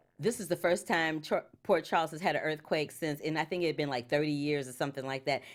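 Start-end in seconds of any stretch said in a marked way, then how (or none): none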